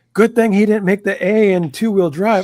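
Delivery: loud, high, mocking, taunting tone. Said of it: "the way he said it".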